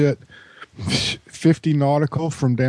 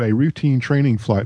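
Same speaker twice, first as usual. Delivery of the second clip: ordinary talk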